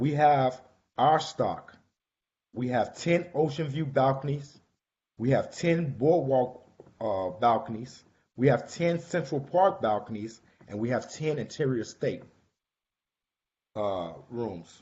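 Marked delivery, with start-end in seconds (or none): 0.0-12.2 slow, deliberate, measured delivery. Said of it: "and I wanna say it slow".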